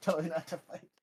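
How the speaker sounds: muttered under breath. Voicing a woman's line in a Mortal Kombat story, muttered under her breath. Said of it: "She says under her breath".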